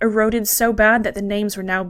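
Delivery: ordinary delivery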